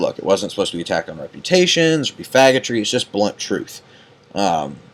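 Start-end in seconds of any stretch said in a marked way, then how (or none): none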